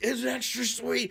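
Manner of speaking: very high, full-on screaming yell. Retelling how a colleague says the line: imitating someone screaming.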